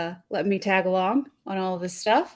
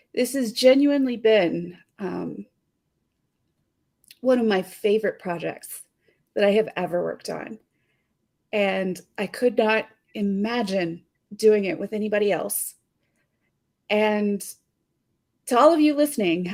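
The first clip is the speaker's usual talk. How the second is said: voice catching, choked up, on the verge of crying. Thanking the two people they worked with week after week, choking up, about to cry. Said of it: "I am a crier and I am about to cry".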